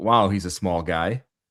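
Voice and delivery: ordinary talk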